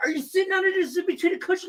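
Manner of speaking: mock group yelling. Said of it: "everybody starts yelling at my buddy Ed".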